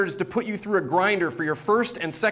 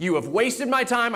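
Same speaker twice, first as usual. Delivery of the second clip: put-on high, furious, dead-serious scolding tone; 5 semitones higher than usual. Retelling what an irate listener said about the pitch: imitating an angry scolding. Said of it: "She was mad and dead serious".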